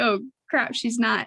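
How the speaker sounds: normal talking voice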